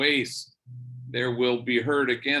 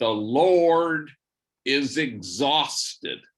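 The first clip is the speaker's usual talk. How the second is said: put-on overconfident, very loud declaiming, "Lord" drawn out; 3 dB louder than usual. Speaker retells a confident man getting up to speak, in a very loud voice. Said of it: "in a very loud voice".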